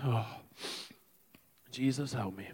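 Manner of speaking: crying while speaking. Ending a sermon about prayer and healing, crying while speaking. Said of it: "as I'm trying to stop crying".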